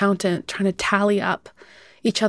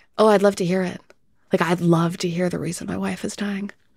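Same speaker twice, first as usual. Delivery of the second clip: put-on flat, dead-eyed deadpan delivery. Retelling a husband's reply to a neighbor: imitating a dead-eyed deadpan reply. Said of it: "looked at her dead-eyed and was like".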